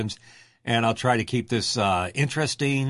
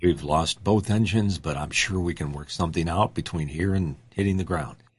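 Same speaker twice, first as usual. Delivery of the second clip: mock-calm pilot voice, much lower; 6 semitones lower than usual. Picturing Tony as a pilot when both engines catch fire; imitating Tony's calm voice. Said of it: "Calm voice is there saying".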